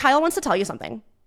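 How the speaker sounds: confrontational, challenging tone. Retelling calling her partner out of the pool: imitating own combative tone. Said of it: "I came off very combative".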